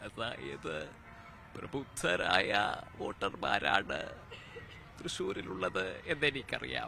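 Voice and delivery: put-on elderly politician voice. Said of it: "പിന്നെ വി എസ് Achuthananda സാറിൻ്റെ ശബ്ദം".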